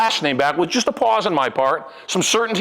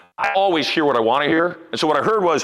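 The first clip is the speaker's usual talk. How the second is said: ordinary talk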